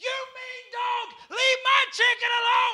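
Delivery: mock very high, shrill, tearful child's scream. Retelling how one of the kids screamed at the dog, retelling a child screaming. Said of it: "screaming at the top of his lungs".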